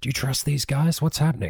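secretive, conspiratorial stage whisper. Taking David aside during the scene, in a lowered-voice whisper. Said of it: "I lower my voice and I whisper".

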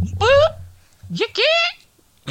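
very high hillbilly voice bursting out, swooping. Reacting to the other speaker's surprise: hillbilly voice coming out. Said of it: "that's my hillbilly coming out".

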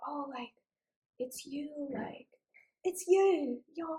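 put-on very drawn-out, high, very slow English child accent. Retelling how kids at a coffee shop came up to them, imitating the kids' accent. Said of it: "The accent".

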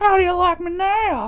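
high, mock yelled, taunting voice.

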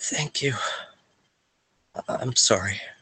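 faint, feeble, very weak whisper. Voicing a woman as another character turns to leave the tent, very weak voice. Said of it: "He hears a very weak".

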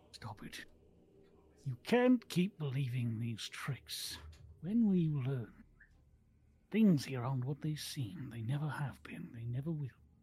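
mumbling away to oneself. Game master voicing an unseen voice among the trees, muttering to itself.

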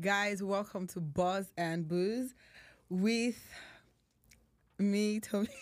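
giggly, laughing through the words, drawn out. Opening the show's first episode, welcoming viewers, laughing while talking. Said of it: "why are you laughing?".

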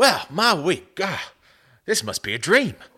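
put-on, generic Southern US accent. Reading a quarterback's week in his voice, doing a put-on Southern accent. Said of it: "so I'm just doing a southern accent".

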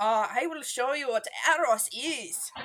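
imitated Swiss accent. Retelling what a character said on a show: imitating a Swiss accent. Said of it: "he was speaking in a super, like, Swiss a-, uh, accent".

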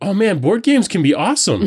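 high, laughing exclamation of amazement. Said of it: "I was like".

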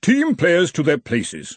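haughty, arrogant, lofty superior tone. An arch-chancellor orders the team players to their places, speaking haughtily. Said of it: "said the Arch-Chancellor of Brazenek haughtily".

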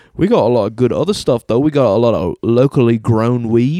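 put-on British accent. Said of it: "This accent is all over the fucking place".

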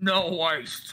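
wet, gurgling words, as through liquid. Describing someone drinking drips from the ceiling, the speaker imitates a gurgle.

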